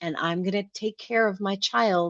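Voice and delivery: ordinary talk, nothing marked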